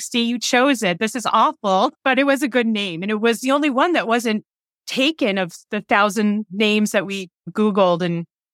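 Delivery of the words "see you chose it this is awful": ordinary talk, nothing marked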